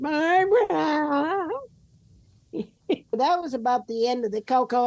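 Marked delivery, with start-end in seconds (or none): 0.0-1.5 barbara called out in a high whine. Imitating someone hollering from the back after something icky: mock-whiny call of Barbara. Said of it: "they whine it".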